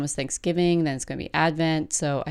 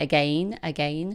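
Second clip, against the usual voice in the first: put-on toddler voice with British accent. Imitating how her toddler says her favorite word, british accent on again. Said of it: "She says it like that in sort of a British accent".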